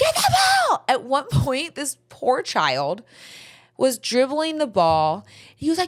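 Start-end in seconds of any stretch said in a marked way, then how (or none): 0.0-0.8 mock very high, screeching scream. Describing a coach yelling at his own players on the field, imitating a coach screaming. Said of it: "screaming at his own players".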